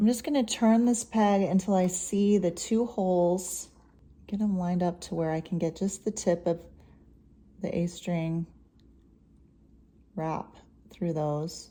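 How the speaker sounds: quiet, careful, hushed golf-announcer play-by-play voice. Changing a string while explaining each step to a listener, talking quietly. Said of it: "I don't know why I'm talking so quietly".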